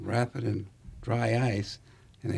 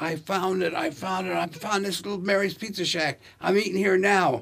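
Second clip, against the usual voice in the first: put-on, high, excited screaming; 8 semitones higher, 4 dB louder than usual. Retelling how a guy screamed at his buddy on the phone: imitating someone screaming. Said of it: "He's screaming at his buddy".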